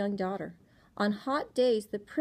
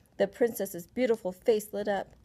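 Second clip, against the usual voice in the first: plain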